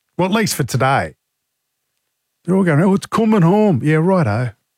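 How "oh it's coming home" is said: jokey fake English accent, pitched up. A radio host mimics the English colleagues around the 4BC offices: put-on English accent. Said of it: "That was my English accent".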